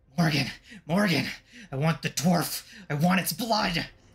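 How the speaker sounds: slurred and hissed words, then a screech. Game narrator voicing Azarissa calling to her brother Morgan: Azarissa's slurred, hissing screech. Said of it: "causing her to slur when she speaks, and she hisses and screeches".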